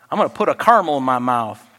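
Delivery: put-on Texas way of speaking. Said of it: "That's the way they say it in Texas".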